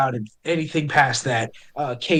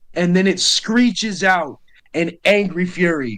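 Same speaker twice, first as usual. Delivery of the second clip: normal talking voice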